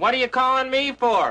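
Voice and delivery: put-on high, angry shout. Describing a wake-up call trick, imitating some guy yelling. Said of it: "you hear some guy yelling".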